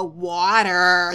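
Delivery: loud, extra-long, stretched ah vowel in water. Retelling how a colleague imitated the way others said water: imitating colleagues saying water. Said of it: "you would then try to imitate us and go".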